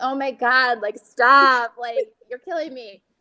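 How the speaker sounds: speech broken up by laughter. Retelling her reaction to what she thought was his joke, retelling laughing while talking. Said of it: "I'm just laughing, like".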